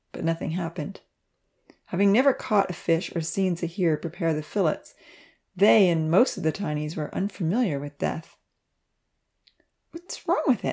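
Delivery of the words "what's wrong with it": very high, puzzled murmur to oneself. Pontsy murmurs to himself over an unmoving creature, a confused murmur. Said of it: "Pontsy murmured to himself".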